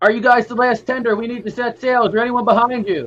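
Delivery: calling out loudly. Player character calls to another boat during a noisy battle, shouting across the water. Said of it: "you could probably scream to them".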